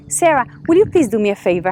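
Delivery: plain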